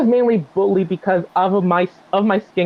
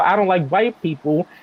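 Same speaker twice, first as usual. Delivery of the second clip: ordinary talk, nothing marked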